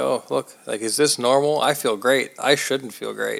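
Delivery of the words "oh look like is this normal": ordinary delivery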